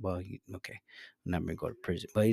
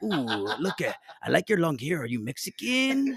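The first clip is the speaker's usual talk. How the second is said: animated, swooping, high, sing-song voice; 6 semitones higher, 3 dB quieter than usual. Retelling how a fellow inmate greeted them: imitating Fernando. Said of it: "He's like".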